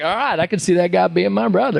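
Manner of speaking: put-on Texan drawl. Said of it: "he's got that accent".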